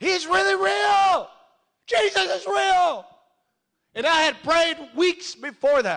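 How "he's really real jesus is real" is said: high, loud, slow shout at top of lungs. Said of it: "And I'm yelling at the top of my lungs".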